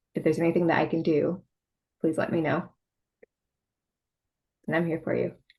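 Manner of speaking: emotional, on the verge of tears. Speaking to someone whose mom is okay: emotional, near tears. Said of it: "You're making me".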